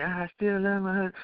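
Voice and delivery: hushed, soft, high stage whisper under the breath. Retelling what the wife said in the background: imitating a half-whisper. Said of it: "I hear my wife whispering".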